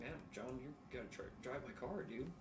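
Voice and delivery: ordinary delivery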